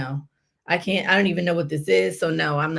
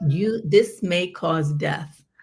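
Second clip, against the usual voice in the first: normal talking voice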